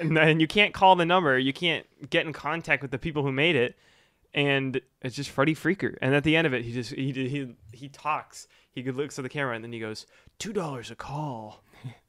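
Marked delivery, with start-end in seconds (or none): 10.4-11.6 put-on suave voice, quieter and slower. Describing the end of a strange ad, Freddy Freaker suave voice. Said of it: "In like a suave voice".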